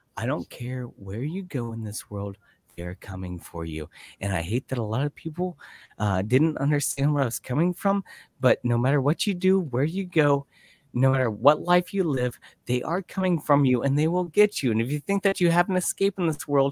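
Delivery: calm radio-host voice. A speaker restates an earlier point, in a calm NPR host voice. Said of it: "I'll say it like an N P R host".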